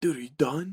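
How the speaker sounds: very quiet hushed voice. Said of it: "off camera very quietly".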